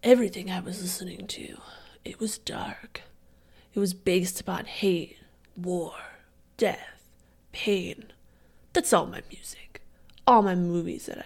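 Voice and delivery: sultry classic vampire voice. Asked to do a vampire like Brad Pitt, use a sultry Brad Pitt vampire voice. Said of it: "So just like sultry?".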